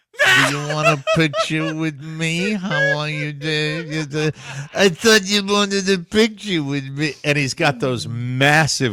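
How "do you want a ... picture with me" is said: put-on whiny voice. Imitating someone asking people on New York streets: whiny Dice voice. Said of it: "the whiny Dice voice".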